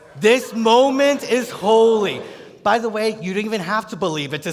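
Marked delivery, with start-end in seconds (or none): 0.2-2.2 slow, raised voice with sincere conviction. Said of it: "now say it like you believe it".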